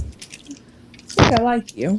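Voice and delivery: amused delivery laced with chuckling. Voicing a character who looks over at a player: chuckling while speaking. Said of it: "She kinda chuckles and she goes".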